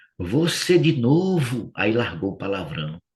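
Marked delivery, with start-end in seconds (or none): 0.2-1.7 acted-out high demon shout, stretching novo. Retelling what a demon cried out on seeing Carlos: imitating a demon shouting. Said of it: "gritou assim".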